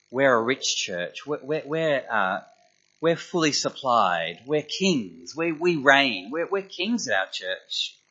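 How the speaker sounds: ordinary delivery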